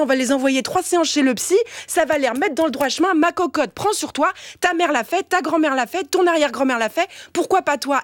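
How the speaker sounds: normal talking voice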